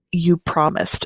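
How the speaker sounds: hushed, barely audible quiet voice. Retelling a book scene where the accused woman answers the man, really quiet voice. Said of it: "in like a really quiet voice".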